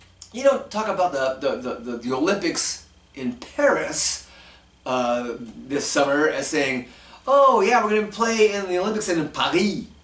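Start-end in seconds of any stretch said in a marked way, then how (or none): 7.3-9.9 French accent put on for show, pitched up. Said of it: "Nobody goes into a French accent".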